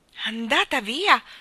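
loud, disbelieving, incredulous tone. A woman is told someone has left again; incredulous question. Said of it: "Domandò incredula la signora Banks".

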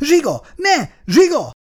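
very high, piercing shriek. A wife tries to stop her husband threatening her child, screaming. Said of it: "Sikította Angéla".

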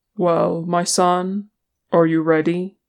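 usual speaking voice

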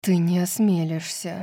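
usual speaking voice

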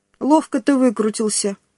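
plain

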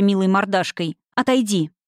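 plain reading voice

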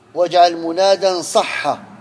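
ordinary talk

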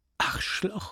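soft, breathy, half-whispered mutter. The Frenchwoman, panicked during the wild ride, muttering. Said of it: "murmelte die Französin".

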